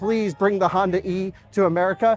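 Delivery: normal talking voice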